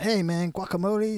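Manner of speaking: put-on Mexican accent. Retelling what they'd say to people, in a very good mexican accent. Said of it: "very good Mexican accent".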